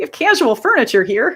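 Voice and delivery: Midwest Illinois accent. The speaker puts on the accent of their mom; Illinois accent. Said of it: "that's the Illinois accent".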